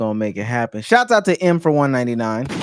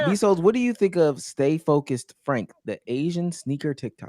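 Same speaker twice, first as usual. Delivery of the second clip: ordinary talk, nothing marked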